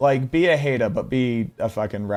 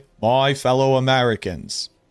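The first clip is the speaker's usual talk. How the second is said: put-on Boston accent; 2 semitones higher than usual. Trying a Boston accent by slipping into JFK: JFK-style Boston accent. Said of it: "When I try to do a Boston accent, I just go into J F K".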